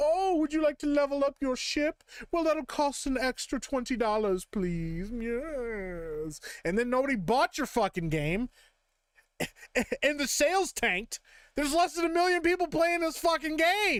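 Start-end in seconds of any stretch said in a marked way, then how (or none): 0.0-5.1 mocking put-on English accent. Ranting at a game's makers about cut microtransactions: mocking English accent. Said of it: "this is an impression of an Englishman".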